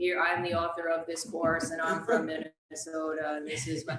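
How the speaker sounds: droning, low, flat monotone narrator voice. Imitating the old gentleman who talks in the course video, in a monotone. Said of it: "talks in a very monotone sort of".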